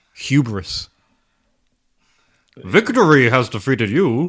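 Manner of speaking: loud, booming masked villain voice. While playing a game, one player suddenly delivers a line in a Bane voice. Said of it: "That was that was Bane".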